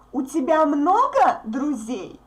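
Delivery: много marked by stress and intonation. Russian lesson marking 'a lot of' with intonation: stress on много. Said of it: "we mark this word много, a lot of, with our intonation".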